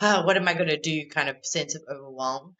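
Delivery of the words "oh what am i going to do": put-on anxious panting, much higher. Recalling a memory from the videos, imitating anxious panting. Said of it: "like almost like panting".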